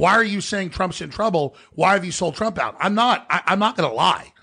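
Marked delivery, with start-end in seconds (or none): 0.0-2.8 angry, complaining tone. Retelling complaints from people mad about the Texas defeat: imitating angry people. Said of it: "they're already mad at me".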